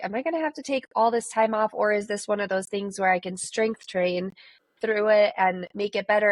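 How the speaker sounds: ordinary delivery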